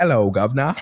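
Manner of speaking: hammy, exaggerated put-on British accent. Showing how people make fun of british people: mock british accent. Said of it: "when people make fun of like British people, uh, like ... like that".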